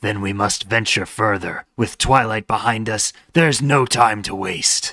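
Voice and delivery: voice like a chain-smoker. Narrator reading a pony story aloud, Pinkie in chain-smoker voice. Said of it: "that's the voice I'm doing".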